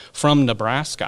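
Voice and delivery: put-on Nebraska accent. Describing a guest, saying where she comes from: put-on Nebraska accent. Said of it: "Was that your best Nebraska accent?".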